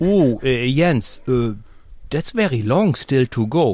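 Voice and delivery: slow, hesitant, doubtful, unconvinced tone. Retelling what the team radio said during a race: imitating a doubtful tone. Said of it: "with a doubtful tone in their voice".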